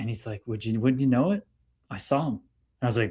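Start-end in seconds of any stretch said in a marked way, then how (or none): 0.5-2.3 put-on male Hungarian accent, quieter. Retelling what a man working with Jamaican folks told him, imitating John's Hungarian accent. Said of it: "like in his Hungarian accent".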